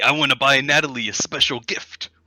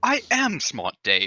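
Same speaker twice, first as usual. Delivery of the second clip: goofy, stupid-sounding, put-on British accent; 4 semitones higher, 3 dB quieter than usual. Acting in a skit, answering a friend who calls him dumb: goofy British accent. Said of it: "Your British accent is so funny".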